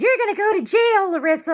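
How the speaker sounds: put-on very high, shrill, loud screaming. Retelling a family fight where a relative screamed a threat: imitating Roseanne screaming. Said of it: "Roseanne's screaming".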